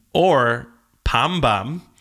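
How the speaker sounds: very thick Korean accent. Explaining a wordplay to a co-host, saying the words in a very Korean accent. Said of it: "I said it in a very Korean accent".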